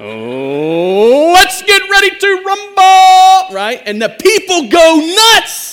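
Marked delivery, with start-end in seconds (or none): 0.0-3.5 "Oh" stretched long and swooped up high. Imitating a boxing match announcer saying his famous line: Michael Buffer impression. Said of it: "Let's say it like he says it".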